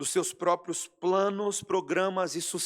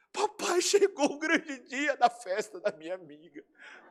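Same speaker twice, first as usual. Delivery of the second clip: put-on child's voice crying with joy; 5 semitones higher than usual. Acting out a girl speaking to her father, imitating a child crying with joy. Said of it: "não consegue fazer mais nada senão chorar de alegria".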